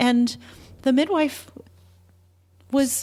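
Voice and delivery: high, tearful voice, close to crying.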